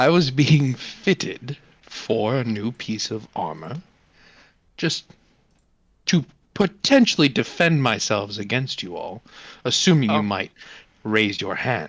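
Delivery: somewhat regal, semi-regal, lordly delivery. The town's ruler addresses the group, semi-regal. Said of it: "Do you actually run this town? I do. / expressioned and demeanored and very semi-regal. / Why do you think I run this town? I run this town so that my food is given to me. I don't have to want. That i".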